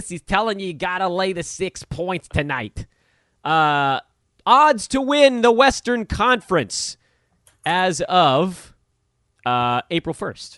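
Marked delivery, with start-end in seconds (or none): 0.1-2.9 put-on New Jersey accent. Imitating a sports betting tipster giving advice: imitating a jersey betting tout. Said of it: "the guy with the voice that's like this".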